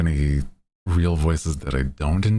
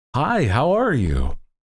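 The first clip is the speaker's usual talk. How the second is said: customer service tone, higher; 8 semitones higher than usual. Showing how a customer service voice would sound: customer service voice. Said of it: "do a customer service voice".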